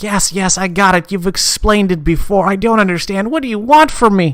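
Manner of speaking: frazzled, fed-up, exasperated, at-wits'-end outburst. Voicing an elven cook who has heard the same explanation again: exasperated, at wits' end. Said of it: "almost ripping his hair out".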